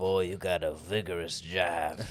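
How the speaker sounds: evil, villainous railroad captain voice. Riffing in a comedy bit about a vigorous jive, evil railroad captain voice. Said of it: "You sound like like a like an evil railroad captain".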